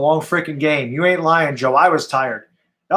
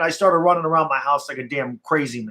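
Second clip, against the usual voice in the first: normal talking voice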